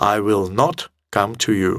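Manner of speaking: slow, sharp delivery, slightly angry and cross.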